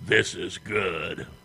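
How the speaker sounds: demonic, deep, horrible growling with a chuckle. Narrator reads a demon gazing upon his hellish kingdom: deep, horrible growling voice. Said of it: "He chuckled and growled in his deep, horrible voice".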